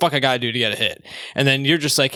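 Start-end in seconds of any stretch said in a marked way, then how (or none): none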